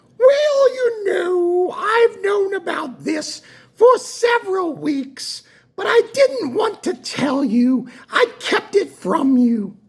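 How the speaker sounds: put-on English accent in a very high voice. Speaker retells what a woman told him on the phone, in a put-on English accent. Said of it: "so this is her English accent".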